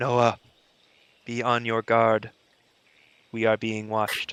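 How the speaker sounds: speaking in a low-toned put-on voice. Narrating a game, voicing Vestige to Noah awake in his tent, low tone. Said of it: "in a low tone".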